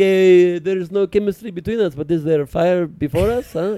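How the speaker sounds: put-on accent from Israel. Retelling playing a character on a dating show, in a put-on Israeli accent. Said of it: "It was my Israeli cousin on Blind Date. Talking like this".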